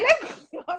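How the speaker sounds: high-pitched, insistent, pushing tone.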